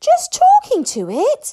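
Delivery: very high, shrill, drawn-out, stunned astonished gasp. Fishlegs reacts to what Hiccup just said, gasping in astonishment. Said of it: "gasped Fishlegs in astonishment".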